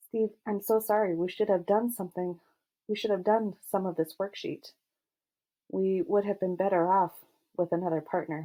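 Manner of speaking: plain reading voice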